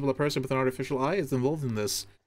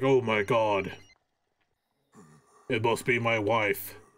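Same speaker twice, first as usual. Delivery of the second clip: put-on low, slow undead zombie voice; 4 semitones lower than usual. Laying out a plan, the speaker voices the masked guy answering the phone: zombie voice. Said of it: "the masked guy with a zombie voice will be like".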